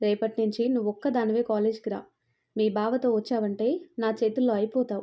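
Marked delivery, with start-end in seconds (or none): none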